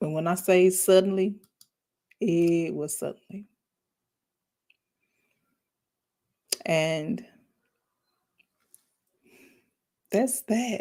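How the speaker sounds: fighting back tears, on the verge of crying. Speaker telling her listeners about something that happened suddenly, holding back tears. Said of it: "really trying to hold back tears".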